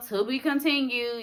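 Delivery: normal talking voice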